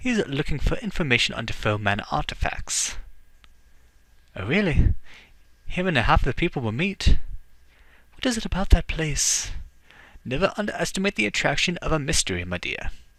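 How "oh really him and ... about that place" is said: put-on Irish accent, spoken up louder. Just introduced to a visitor, the assistant Siobhan answers, Siobhan's Irish accent. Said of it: "I'm giving her an Irish accent".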